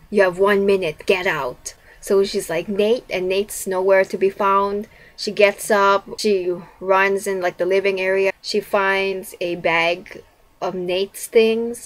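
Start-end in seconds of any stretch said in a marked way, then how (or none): 0.1-1.7 eerie, creepy, mechanical robotic voice. Retelling a spooky phone call in a story, creepy robotic voice. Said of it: "in this creepy robotic voice".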